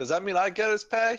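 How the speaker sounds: high, cheeky tone.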